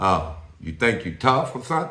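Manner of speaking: very deep, menacing, intimidating voice. Acting out a prison intimidation talk with a new inmate, in a mock-intimidating real deep voice. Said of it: "real deep voice and and and and and".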